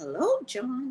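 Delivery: voice breaking on a name. Calling out a name to a viewer: voice cracking on a name. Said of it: "I cannot call out his name without my voice cracking".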